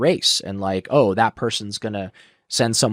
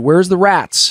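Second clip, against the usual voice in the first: loud, high, nasty, mocking tone; 9 semitones higher, 7 dB louder than usual. Retelling what he asked after you pushed on the air mattress, imitating him being mean. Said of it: "He was being mean at this point".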